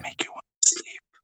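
soft, close ASMR whisper.

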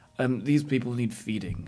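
ordinary talk, nothing marked

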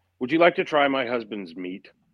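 normal talking voice

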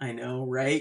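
normal talking voice

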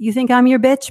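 high, mocking tone through laughter. Retelling how a man laughed at three aggressive people, retelling a mocking laugh. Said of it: "he's laughing at them like".

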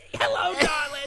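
very high, loud 1980s sitcom mom voice. Showing a voice that sounds like a 1980s sitcom mom.

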